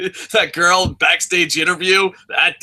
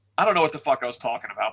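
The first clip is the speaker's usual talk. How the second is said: usual speaking voice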